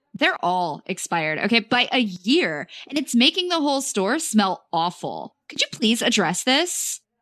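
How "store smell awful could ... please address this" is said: ordinary delivery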